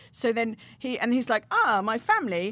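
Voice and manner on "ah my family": put-on Eastern European accent. Retelling pretending to be foreign to police: imitating a put-on Eastern European accent. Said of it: "then we had to do the accent".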